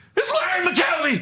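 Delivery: high, slow, accusing shouted tone. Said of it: "And he goes".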